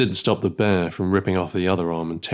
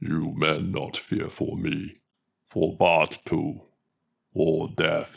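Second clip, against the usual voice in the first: rough, deep monster voice; 2 semitones lower, 4 dB quieter than usual. Narrator reads the orc general pointing toward the trenches, raspy baritone Tharlok voice. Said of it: "his voice a raspy baritone".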